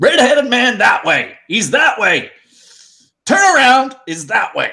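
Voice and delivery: furious shouting, very high-pitched and swooping. A player voicing Russet as he calls out to the others, angry yelling. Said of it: "He's quite angry and he's just yelling".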